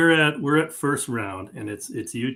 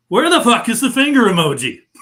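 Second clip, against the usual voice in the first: high, loud yelling in frustration. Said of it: "So I yell out".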